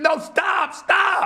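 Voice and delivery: very high, contained, held-in cry. Retelling watching the news about Michael Jordan gambling: retelling own screaming. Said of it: "and I'm screaming".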